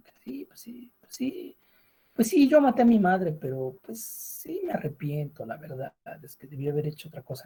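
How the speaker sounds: half-sarcastic tone.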